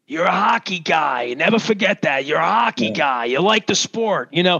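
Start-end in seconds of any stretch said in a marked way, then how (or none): 0.1-3.2 put-on Italian accent, Canadian tinged. Telling an old story, quoting what Gene Ubriaco always said, in his Canadian Italian accent. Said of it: "Gene would say it in his Canadian Italian thing".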